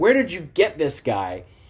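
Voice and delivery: mild, held-back, reined-in yell. Retelling a wrestling segment where Miz yells at an actor: imitating Miz yelling. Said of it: "Miz starts yelling at him".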